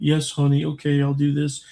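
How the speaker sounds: gentle, mild, meek, browbeaten voice, high. Retelling helping a couple move something, quoting the husband: imitating a soft-spoken man. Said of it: "he's like softly spoken".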